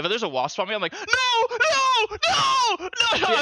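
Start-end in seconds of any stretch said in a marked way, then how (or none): 0.9-2.9 mock very high, very slow pleading cry, drawn-out nos. Describing a wasp landing on them, acting out screaming 'no'. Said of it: "I'm fucking screaming no".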